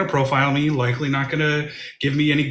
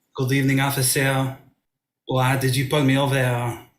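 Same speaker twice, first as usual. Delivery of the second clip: comedic, put-on French accent. In a sketch, a driver pulled over by an officer, in a French accent. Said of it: "I have a authentic French accent".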